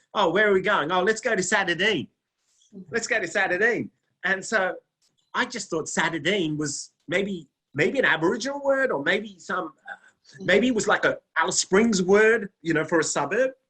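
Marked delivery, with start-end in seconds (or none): 0.2-3.9 put-on Australian accent, pitched up, chatty. Retelling how locals said a place name: imitating an Australian accent. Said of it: "the way in the Australian accent".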